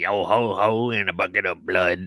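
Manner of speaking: put-on old retired pirate voice, slow and unhurried. Joking about a Bucket of Blood Street address, in a retired pirate voice. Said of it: "Sounds like a retired pirate".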